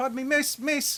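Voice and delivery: bad put-on Irish accent, pitched very high. Voicing an Irishman leaning forward in the other alley, in an awful Irish accent. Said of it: "that's an awful Irish accent".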